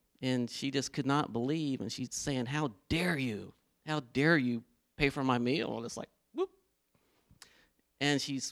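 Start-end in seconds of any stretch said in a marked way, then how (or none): 2.5-5.8 mock indignant, disbelieving, furious woman's voice. Retelling how a lady reacted to having her meal paid for: imitating a furious woman. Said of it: "this lady is furious".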